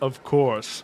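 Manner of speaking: forced, as deep as possible voice. Zorian answers when asked if he can read the label, in the deepest voice he can muster. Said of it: "responds in about as deep as voice if he could muster".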